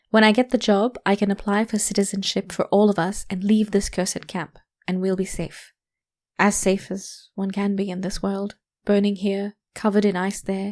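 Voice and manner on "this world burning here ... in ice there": ordinary delivery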